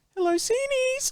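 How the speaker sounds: put-on high-pitched old woman voice. Recalling phoning their nan, imitating grandma answering the phone. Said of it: "That's my nan's impression".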